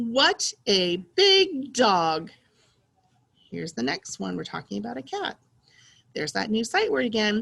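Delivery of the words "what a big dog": excited voice, drawn out very slowly. Reading a practice sentence aloud for learners, in an excited voice. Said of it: "try to say it in an excited voice".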